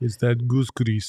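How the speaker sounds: bad, fake Russian accent. Joking about an NBA player's hair not moving, in a bad Russian accent. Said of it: "Did you like my Russian accent?".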